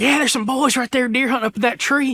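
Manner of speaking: very high, put-on Southern country voice. Imitating an older hunter talking to his group nearby: put-on southern accent. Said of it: "I was like a southern accent".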